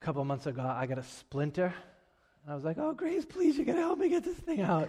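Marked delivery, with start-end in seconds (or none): 2.8-4.9 play-acted very high, whiny, blubbering crying, pleading tone. Retelling a past moment with a splinter, imitating his own crying plea. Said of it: "I'm crying over like a little splinter".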